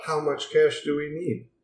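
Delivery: hushed, dead-level, flat robotic android monotone. Playing an android character with the group, in a monotone android voice. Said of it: "Love that monotone thing that you're doing".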